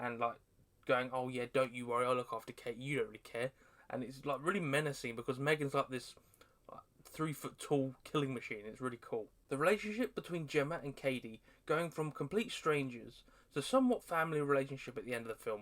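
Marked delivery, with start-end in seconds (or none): 1.1-3.5 put-on snarky character voice. Describing the film, acting out M3GAN's snide remarks to Gemma: mock-snide M3GAN voice. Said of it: "making snide comments at Gemma all the time".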